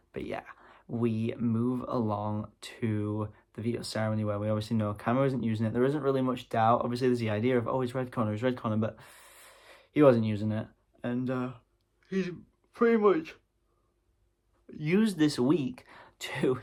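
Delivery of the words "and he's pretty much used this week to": slow yawning speech, pitched up. Recapping the veto ceremony, yawning mid-sentence. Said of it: "sorry for yawning mid-sentence".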